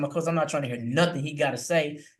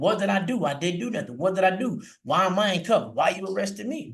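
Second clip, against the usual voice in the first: yelling in protest, but held back; 4 semitones higher than usual. Recalling being put in cuffs at fifteen, retelling his own yelling. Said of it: "Whole time I'm yelling".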